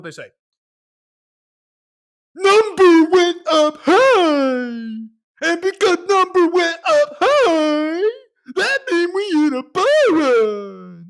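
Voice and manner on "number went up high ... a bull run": very high, loud, slow, stretched-out goofy moose voice. Reading out a claim, doing a Bullwinkle voice impression. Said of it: "I'm trying to sound like Rand Nooner with his Bullwinkle voice".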